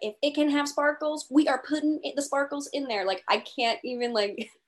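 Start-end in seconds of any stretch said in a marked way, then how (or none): 0.0-3.0 playful put-on Texas accent, pitched up. Describing someone's everything's-bigger-in-texas attitude: put-on texas accent. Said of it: "I love your Texas accent".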